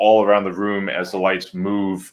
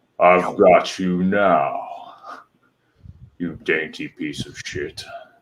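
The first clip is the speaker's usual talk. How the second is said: deep, low voice; 2 semitones lower than usual. Game master voices an unseen speaker in the dark cavern, in a deep voice. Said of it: "then a deep voice says".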